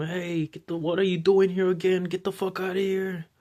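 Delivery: restrained, mild yelling. Storyteller acts out a guy waking a man again, imitating a guy screaming. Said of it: "The guy screaming at him".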